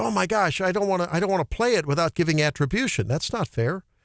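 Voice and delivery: normal talking voice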